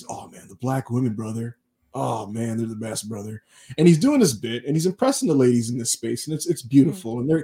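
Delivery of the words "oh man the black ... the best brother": put-on slight Southern accent. Retelling how a guest greeted the space: slight Southern accent imitating Zubaz. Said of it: "He kinda has a slight Southern accent".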